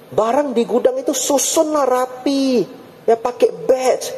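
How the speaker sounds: put-on, very high, fed-up nagging grumble. Retelling how someone kept waiting complained: imitating grumbling nagging. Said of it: "Ngomel-ngomel betul".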